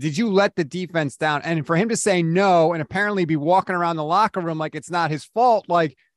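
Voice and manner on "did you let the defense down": plain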